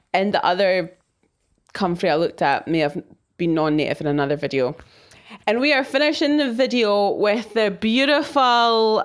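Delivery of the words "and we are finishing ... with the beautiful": ironic, sarcastic, clearly insincere fake admiration. Closing a plant video on a plant they are not a fan of: sarcastic. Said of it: "I'm saying that sarcas- sarcastically".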